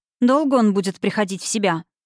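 ordinary delivery

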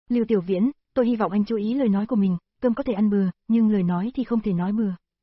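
ordinary delivery

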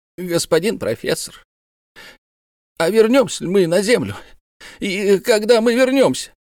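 high, quavering, faltering, trembling voice. A man approaches the professor and asks him a question, in a trembling voice. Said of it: "спросил его дрожащим голосом".

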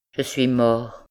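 murmured, murmuring. A wounded man lying in the grass answers the old porter: murmured. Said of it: "murmura Philippe".

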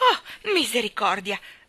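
sudden, loud, shocked, startled cry. Peeking through a keyhole, a woman falls as the door bursts open: cried out. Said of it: "Gridò".

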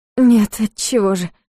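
ordinary delivery

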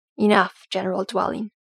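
ordinary delivery

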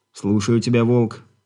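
ordinary delivery

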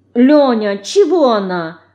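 put-upon, complaining little tone. Narrator reads a girl called Mouse complaining to Lenya about her pestering sister; complaining. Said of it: "пожаловалась мышка".

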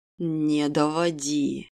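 rasping, hoarse, low, eerie, menacing voice. Reading a novel, a character orders the defiant narrator: hoarse, low, menacing. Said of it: "хрипло, низко и откровенно жутко приказал Даррен".

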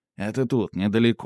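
plain

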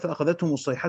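plain

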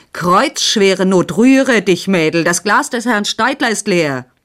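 loud, forceful shout. Narrator reading a man calling out to a girl, slamming his fist on the table. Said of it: "mit der derben Faust auf den Tisch hinschlagend".

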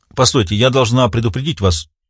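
ordinary delivery, nothing marked

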